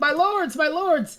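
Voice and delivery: very high cry, drawn out long. Retelling a scene where Habris runs in: voicing Habris. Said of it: "Habris runs in and he's like".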